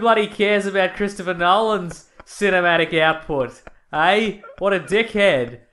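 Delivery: loud, put-on Australian accent done as a bit. Acting out a reply about movies in an Australian accent. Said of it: "I'll do my Australian accent".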